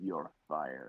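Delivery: low, soft muttering.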